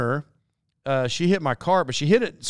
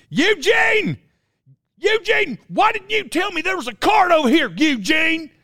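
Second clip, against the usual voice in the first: high-pitched, reproachful put-on yell; 11 semitones higher than usual. Retelling how a woman in Walmart yelled at her partner: imitating a woman yelling. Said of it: "so she starts yelling at him".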